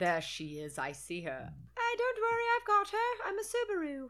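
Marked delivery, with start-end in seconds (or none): 1.8-4.1 very high, swooping, sing-song British car voice. Playing a car's voice spotting someone, in a British Subaru car voice. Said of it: "And I'm British for some reason".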